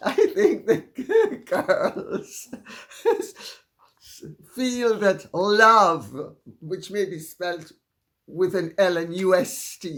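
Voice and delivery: words spoken through laughter.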